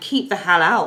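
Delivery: plain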